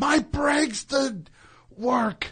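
shrill, very high yell. Retelling being pulled over, the speaker re-enacts yelling back at the cop. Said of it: "I yelled back at the cop".

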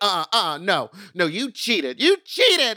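high, rising, acted, indignant outrage. Retelling the mom's protest at the judging table: imitating mock-upset mom. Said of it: "She was doing that mom thing".

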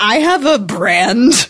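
very slow, laughing through the words. Saying a line that sets off laughter: laughing while talking. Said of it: "I can't say that sentence without laughing".

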